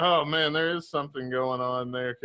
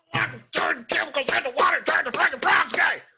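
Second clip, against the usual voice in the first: angry, high, loud yell, rattled off fast. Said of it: "he just yells a bunch of shit".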